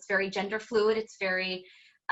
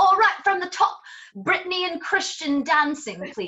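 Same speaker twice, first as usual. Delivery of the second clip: put-on thick, laid-on British accent, pitched very high; 9 semitones higher, 3 dB louder than usual. Recalling what Warren would call out, imitating Warren's thick British accent. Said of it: "Warren with his thick British accent would be like".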